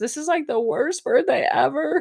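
acted, very high, sobbing, tearful crying voice. Retelling what a crying woman said on her birthday: imitating her crying. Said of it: "she's crying and she says".

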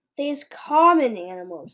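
dripping with open contempt, contemptuous and scornful. The giant answers the girl's question, speaking contemptuously. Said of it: "said the BFG contemptuously".

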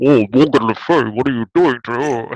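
put-on muffled, croaky villain voice with affected accent. Speaker imitates the off-screen villain calling out to Morgan Le Fay: muffled villain voice. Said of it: "he's really muffled".

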